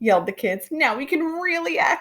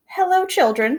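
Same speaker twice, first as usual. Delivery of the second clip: sugary-sweet voice; 5 semitones higher than usual. Reading a story aloud, voicing a greeting to the children in a sweet voice. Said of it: "someone said in a sweet voice".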